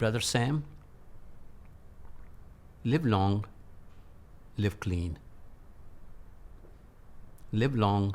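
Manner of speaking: gentle, very soft, hushed voice. Speaker retells what a man said to him in 1980: very soft voice. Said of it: "In a very soft voice".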